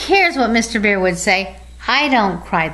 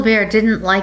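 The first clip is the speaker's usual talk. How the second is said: plain reading voice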